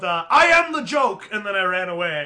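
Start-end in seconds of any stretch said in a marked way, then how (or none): 0.0-1.3 very high, shrill, loud, stretched-out yell. Speaker retells what they yelled to an audience before running away, retelling a yell. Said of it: "I yelled".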